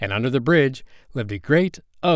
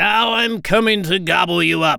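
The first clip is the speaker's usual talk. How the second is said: great ugly troll voice, high, slow, drawn out; 7 semitones higher than usual. Reading a billy goat story aloud, speaking as the troll in a troll voice. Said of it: "and under the bridge lived a great ugly troll with eyes as big as saucers and a nose as long as a".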